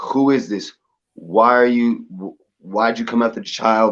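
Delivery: put-on aggressive, angry tone. Retelling demanding to know who it was: retelling a raised voice. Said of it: "I raised my voice".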